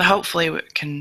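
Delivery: plain reading voice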